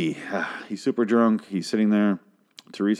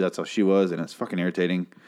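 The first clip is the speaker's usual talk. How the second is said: ordinary talk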